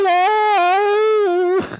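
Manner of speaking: shrill, drawn-out, loud fake posh British accent. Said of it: "trying to talk like the Queen".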